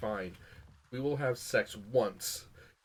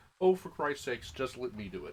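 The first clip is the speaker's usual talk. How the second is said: ordinary talk, nothing marked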